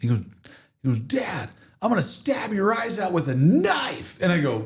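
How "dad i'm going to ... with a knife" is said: shrill, very high-pitched yelled outburst. Retelling something shocking the kid once said: imitating someone yelling. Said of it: "he yelled".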